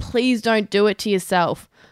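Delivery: ordinary talk, nothing marked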